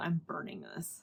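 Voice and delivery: ordinary talk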